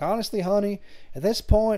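put-on overdone Southern accent. Recapping a story, quoting the record keeper lady's reply: overdone southern accent. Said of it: "putting that Southern accent on hard".

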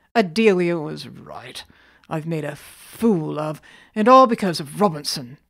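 snorting in disgust. After a fruitless search of the tower rooms, he snorts in disgust. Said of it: "he snorted".

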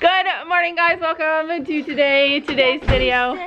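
bright, cheerful, slow, really happy voice. Opening a video after several retakes, told to say it really happy. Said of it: "Say it really happy".

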